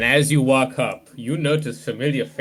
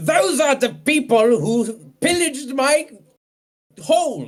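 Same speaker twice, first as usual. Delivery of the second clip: bellowing, much higher and louder; 14 semitones higher, 4 dB louder than usual. In a tabletop game, CJ points at the players and accuses them: CJ bellowing. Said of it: "bellows through his gods and yells".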